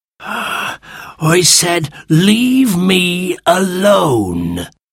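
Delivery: hoarse, husky, rough, grouchy voice. Reading a story: an unseen voice answers the digging children, hoarse, grumpy voice. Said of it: "they heard a hoarse, grumpy voice".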